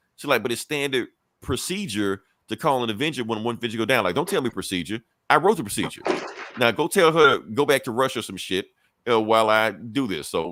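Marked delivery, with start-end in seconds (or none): none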